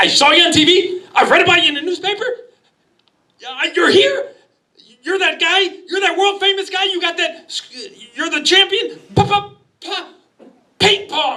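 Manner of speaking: mock very high, excited babble, gushing. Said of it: "And he's all excited".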